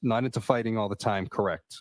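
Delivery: ordinary delivery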